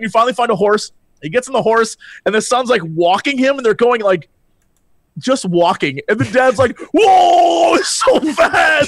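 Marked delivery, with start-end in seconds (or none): 6.9-8.9 acted, very high, drawn-out, frantic panic. Retelling a game quest where the dad rides a walking horse: imitating Chad losing his mind. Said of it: "the dad's losing his mind".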